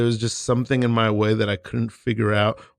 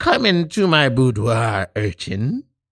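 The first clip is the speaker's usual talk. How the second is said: witchy character voice. A witch welcoming a visitor in an improvised scene, witch voice. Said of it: "I'm a witch".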